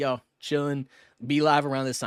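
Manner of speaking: usual speaking voice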